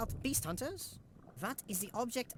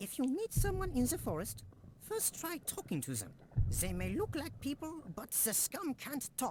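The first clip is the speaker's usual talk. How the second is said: put-on speaking English with a German accent; 4 semitones higher than usual. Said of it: "This guy having a German accent".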